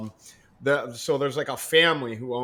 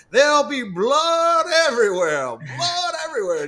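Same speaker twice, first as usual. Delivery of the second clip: very high-pitched, shrill, swooping scream; 14 semitones higher, 7 dB louder than usual. Speaker retells a lady screaming after they came into her house unannounced: retelling a woman's scream. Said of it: "she just screamed".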